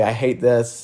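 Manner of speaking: mock tearful, crying tone. Retelling a companion crying on the trail: imitating someone crying. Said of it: "you'd cry and you would say".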